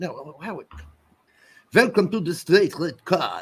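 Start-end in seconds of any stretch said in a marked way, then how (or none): 1.7-3.4 put-on French accent, pitched up. Redoing a listener's greeting as a joke: put-on french accent. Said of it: "I guess he's French".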